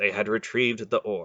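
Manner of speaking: plain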